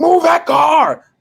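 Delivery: put-on play-acted very high, raspy, rough child shouting. Retelling how a six-year-old niece yelled out the window: imitating a child yelling. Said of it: "starts yelling in the window".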